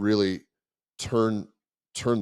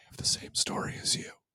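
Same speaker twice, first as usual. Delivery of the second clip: very quiet, barely audible whisper. Retelling what people came up and said to the speaker: imitating someone whispering. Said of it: "whispering to me and going like".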